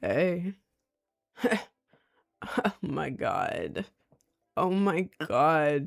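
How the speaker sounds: very slow, low, scratchy forced creaky vocal fry. Imitating how some people talk when trying to be attractive: low scratchy vocal fry. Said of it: "that really low, scratchy voice that you force? The vocal fry".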